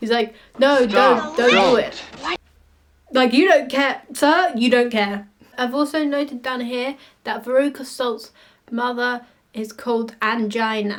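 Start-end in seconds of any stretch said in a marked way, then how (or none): 0.6-2.0 loud, dripping sarcasm with zero concern. Retelling how Wilder Wonka warns a child: imitating Wonka's sarcastic warning. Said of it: "he says it with so much sarcasm".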